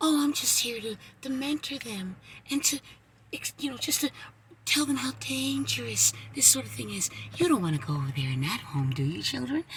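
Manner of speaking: very hushed, soft-spoken, sing-song creepy voice. Mocking someone who says he mentors children, put-on soft voice. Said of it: "When you're using that soft voice".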